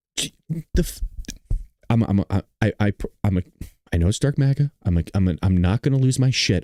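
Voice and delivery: angry, stumbling stammer, tripping over words. Talking about press briefings and the media, angry stuttering. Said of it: "I'm already stuttering 'cause I'm getting pissed off".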